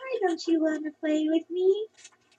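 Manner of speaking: soft, high, eerie creepy-doll voice. Retelling a haunted-house scare as a doll: imitating a creepy doll. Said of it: "do the creepy little look, and be like".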